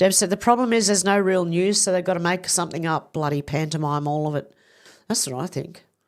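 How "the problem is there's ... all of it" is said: normal talking voice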